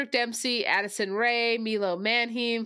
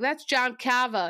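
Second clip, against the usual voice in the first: heavy, laid-on, put-on Boston accent. Mocking an actor who keeps dropping his accent, imitating a Boston accent. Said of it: "he has a Boston accent".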